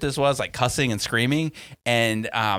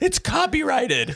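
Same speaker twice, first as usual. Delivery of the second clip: mock screaming, higher pitch. Retelling a video of a woman screaming at her neighbor: imitating someone screaming. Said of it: "some British Karen was screaming at her neighbor".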